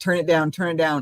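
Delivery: ordinary talk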